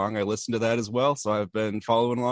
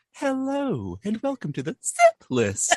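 put-on very high, swooping teenage puberty voice; 13 semitones higher than usual. Opening the show with its welcome line: impression of Amanda's puberty voice. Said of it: "a very good impression of my puberty voice".

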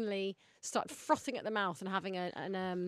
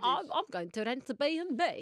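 unconvincing, poor put-on Swedish accent; 5 semitones higher than usual. Asked to do it again, the speaker retries the accent: bad Swedish accent. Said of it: "that is not a good accent".

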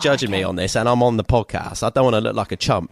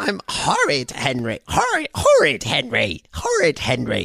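put-on gruffer voice, pitched higher; 3 semitones higher than usual. Trying out voices for a story character, doing a gruff Horrid Henry voice. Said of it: "make him a bit gruffer because he's horrid Henry".

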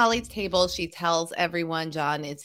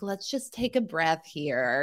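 mock annoyingly calm, even, reasonable-sounding tone; 4 dB quieter than usual. Retelling how John acts after a fight, imitating John's calm gaslighting tone. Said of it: "that super annoying gaslighty thing where he's like".

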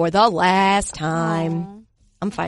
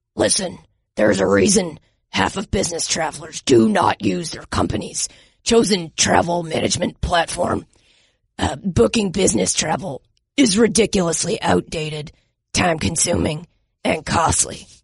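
put-on gravelly football coach voice; 3 semitones lower than usual. Reading a sponsor ad in a Coach O impression: Coach O voice. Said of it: "Like Coach O?".

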